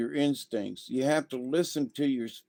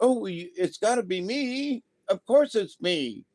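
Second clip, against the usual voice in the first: put-on high, little voice; 8 semitones higher than usual. Mimicking someone who claims to be a spirit guide, in a high-pitched voice. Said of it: "this high pitched voice".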